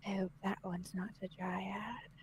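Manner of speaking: very quiet put-on voice. Voicing a character looking at a statue's head, speaking very quietly. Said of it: "just very quietly".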